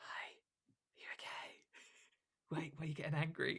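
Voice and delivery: very soft, barely voiced whisper under breath. Retelling own past words to a co-actor on stage, imitating own past whisper. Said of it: "whisper to him".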